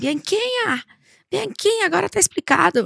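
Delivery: mock, high-pitched, loud shouted call. Recalling the desk head bursting into the room; retelling a shout. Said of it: "gritando assim".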